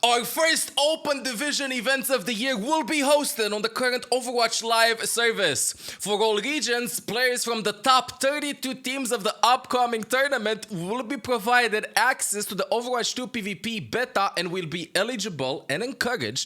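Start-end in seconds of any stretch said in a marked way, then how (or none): 0.0-13.2 hyped-up, dramatic hype-man announcer delivery. Rereading the grand announcement aloud: hyped-up delivery. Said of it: "let me hype this up".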